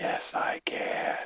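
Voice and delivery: hushed, soft, breathy whisper. Answering a bugbear who asks if she can talk, Nubin whispering. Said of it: "Nubin's gonna whisper".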